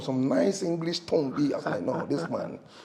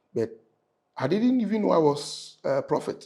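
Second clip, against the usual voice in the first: ordinary delivery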